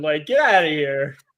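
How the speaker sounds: New York Long Island accent. Ranting after being lectured by someone, Long Island accent. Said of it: "how he pulled his accent out".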